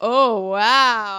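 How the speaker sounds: loud, sarcastic delivery of oh wow.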